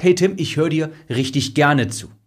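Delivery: ordinary delivery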